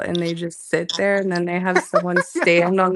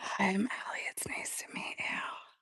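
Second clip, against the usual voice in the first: playful, put-on ASMR whisper, very soft; 2 semitones higher, 17 dB quieter than usual. Greeting listeners after being asked to keep talking: put-on ASMR whisper. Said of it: "you don't need a whisper".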